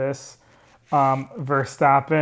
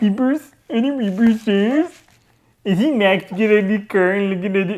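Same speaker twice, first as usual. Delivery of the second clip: little nerd voice, higher and louder; 7 semitones higher, 4 dB louder than usual. Joking about drivers peeking at tires, wearing glasses: nerdy voice. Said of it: "You sound like such a little nerd".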